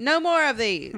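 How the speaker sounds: put-on loud, old-fashioned, old-timey way of talking. Speaker quotes a woman from a story, in an old-timey voice. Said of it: "old timey".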